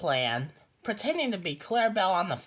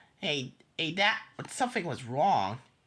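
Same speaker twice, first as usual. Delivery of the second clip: ordinary delivery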